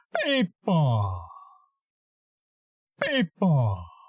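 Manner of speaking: last syllable drawn out, swelling, then breathy fade. Voice lesson sculpting a character line: Kronk voice, last syllable fading to breath. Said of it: "drag out the last syllable of each sentence, and elevate the volume in like the middle of the last word. Then let the last syllable just kind of disappear in a finally drug out breath".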